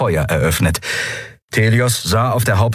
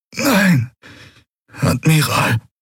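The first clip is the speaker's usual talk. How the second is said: strained, pained groan, pitched up; 8 semitones higher than usual. In a story, the wounded first officer answers the admiral, groaning. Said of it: "ächzte Qualor".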